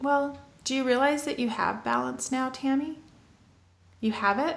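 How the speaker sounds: plain, simple tone. Retelling what her friend said to her on a walk, quoting a friend, speaking quietly. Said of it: "she just very quietly said".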